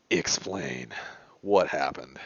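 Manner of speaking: low, irritated, annoyed, angry tone. Voicing a character who crosses his arms and scowls: angry, scowling character voice. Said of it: "he scowls a little harder".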